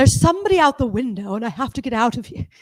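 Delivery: stagey put-on British theatre-actor accent. Describing how a man speaks, imitating him: fake british thespian accent. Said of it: "it's an interesting kind of accent".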